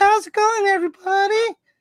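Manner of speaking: voice pushed very high in pitch. Showing another speaker how to say the line: imitating Dougie. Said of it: "you gotta go like this".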